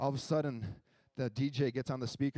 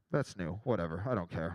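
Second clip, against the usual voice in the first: plain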